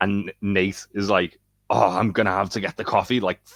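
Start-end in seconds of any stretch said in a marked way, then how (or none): 1.7-3.2 indignant, seething, furious tone. Retelling a TV scene where Nate has to get coffee: imitating Nate, furious. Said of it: "furious about it again".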